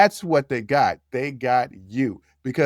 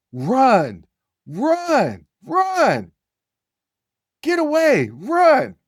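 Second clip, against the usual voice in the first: put-on yelling, very high, very slow, drawn-out; 11 semitones higher than usual. Retelling hiding in a parking lot and yelling to a friend: retelling a group yell. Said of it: "we're yelling out".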